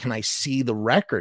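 ordinary talk

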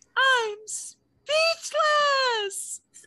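very high-pitched, screeching, gushing voice. Retelling what a girl who hardly spoke all season said, imitating a high-pitched screeching voice. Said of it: "like in this like high-pitched voice".

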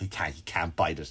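very low, soft talking dog voice. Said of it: "and the dog is like".

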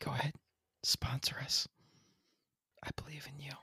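quiet, coaxing whisper.

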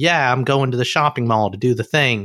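breezy, put-on American accent. Imitating a German friend who likes using her American: put-on American accent. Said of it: "when she likes to use her American, she's like".

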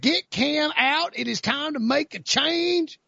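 mock North Carolina caller voice. Imitating a radio caller pushing for a quarterback change: North Carolina radio caller voice. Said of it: "that's my North Carolina radio caller".

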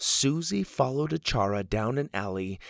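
ordinary delivery

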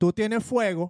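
put-on, imitated Puerto Rican accent. Talking to Dorita and trying out her accent, with a put-on Puerto Rican accent. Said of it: "lo iba a decir con acento así".

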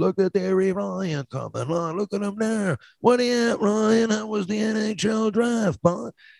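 very high-pitched, slow, drawn-out drawling speech. Imitating a childhood acquaintance who spoke really slow: imitating Tony Fowler's slow speech. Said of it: "he used to speak really slow like this".

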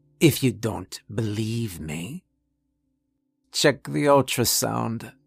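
menacing near whisper. Reading a story, a doctor warning a colleague: menacing near whisper. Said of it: "his near whisper".

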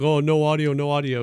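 put-on mocking, teasing tone. Retelling someone making fun of missing trailer audio: imitating someone mocking. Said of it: "making fun of Chad".

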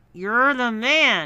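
loud, forced groan through clenched teeth. Told to say it louder, the narrator repeats the admission, moaning through gritted teeth. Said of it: "I moaned through gritted teeth".

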